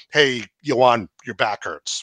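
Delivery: mock snarky voice, put-on sarcastic tone. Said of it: "I'm being snarky about it".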